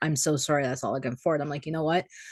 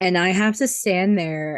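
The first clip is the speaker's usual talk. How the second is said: normal talking voice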